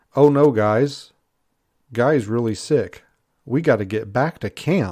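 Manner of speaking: atrociously bad, no-effort acting. Retelling a TV show line, mocking an atrociously read line. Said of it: "the lines are so atrociously read".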